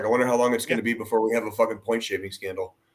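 mock dripping sarcasm, dry and fast. Recalling first seeing gambling ads on sports broadcasts, retelling a very sarcastic comment. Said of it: "I made a very sarcastic comment".

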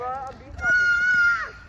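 screaming, high, loud, slow shout.

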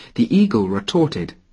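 usual speaking voice

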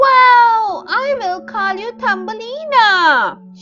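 crying out with joy. Reading a fairy tale aloud, voicing the overjoyed woman: crying out with joy. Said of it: "she cried".

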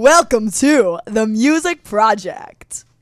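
over-the-top radio announcer voice, slow and drawn-out. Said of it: "the most over-the-top radio voice you can possibly do".

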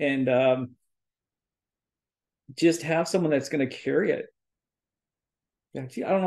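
getting choked up. Speaker talks about finding students who will carry on the teaching; choking up. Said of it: "I'm choking up".

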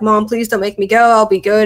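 put-on tearful, crying, pleading voice. Retelling begging the mother on the night of being taken: retelling own tearful begging. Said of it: "I was begging her, I was, like, crying".

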